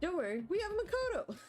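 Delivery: comically wrong, very high, goofy silly voice. Reading a game character's line aloud in a funny wrong voice. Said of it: "That's the wrong voice for him".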